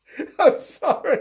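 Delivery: laughing through the words. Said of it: "I'm really laughing".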